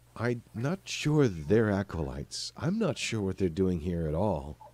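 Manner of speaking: thoughtful, musing, considered, plain human voice. Voicing the face on the left-hand side, in a more thoughtful human voice. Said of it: "more thoughtful human voice".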